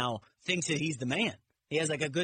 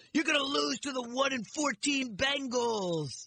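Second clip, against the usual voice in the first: shrill mocking shout; 8 semitones higher than usual. Recounting a video of a fan in the stands at a player, retelling a yell. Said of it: "this guy yells".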